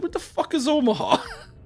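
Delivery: very high-pitched New Yorker voice. Imagining how a New Yorker would react: New Yorker accent. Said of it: "Like in the in that New Yorker voice".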